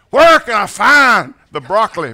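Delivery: loud, booming pulpit preacher voice. Joking that you can spot preachers in grocery stores, preacher voice. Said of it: "You can tell preachers in grocery stores".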